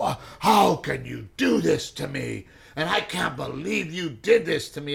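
slow, rough, outraged, pissed-off voice. Retelling a phone call from the other speaker's dad: imitating an angry father. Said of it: "He's pissed".

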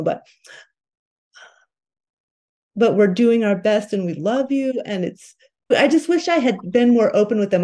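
becoming emotional. Reflecting on wishing to have been more open with them, getting emotional. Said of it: "I'm going to get emotional".

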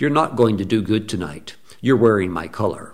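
icy calm, cold, cool, fully in control. Retelling words a dead man spoke to them: imitating a calm, cold voice. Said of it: "he spoke it to me in that type of a voice".

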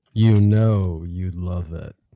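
loud, deep movie-trailer announcer voice. Performing the line after being asked to say it: deep voiceover voice. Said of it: "light it up".

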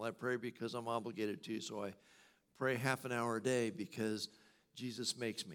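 ordinary talk

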